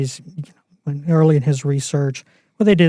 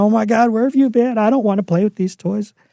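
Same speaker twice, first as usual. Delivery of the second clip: put-on high, bawling crying-baby wail; 7 semitones higher than usual. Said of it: "the baby won't stop bawling".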